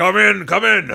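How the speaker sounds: gruff, rasping berserker shout, very high and loud. The narrator voices a berserker answering a knock at his office door: gruff berserker voice. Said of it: "you hear the gruff voice of this berserker say".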